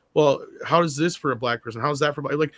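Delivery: ordinary talk, nothing marked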